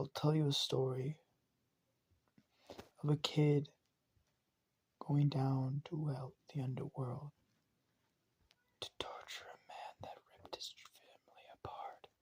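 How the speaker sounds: hushed, soft, close-up whispering. Narrating a story where he whispers a story in her ear, whispering. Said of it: "He whispers in her ear".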